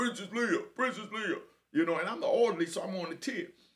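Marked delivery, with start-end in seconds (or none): 0.0-1.4 high, loud hollering yell. Retelling a man calling out a nickname: imitating a big deep voice. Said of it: "this big, deep ass voice".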